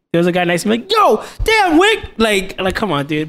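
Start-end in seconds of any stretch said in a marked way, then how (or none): 0.9-2.0 hyped-up man's swooping, excited outburst. Describing a guy seated next to him early on, retelling a loud outburst. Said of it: "super loud".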